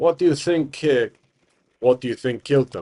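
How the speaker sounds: put-on deep, grizzly, big-guy Eastern European accent. Retelling a game, a big guy character standing there asks a question, deep grizzly Eastern European voice. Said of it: "changing it ever so slightly to kind of a Eastern European deep grizzly voice".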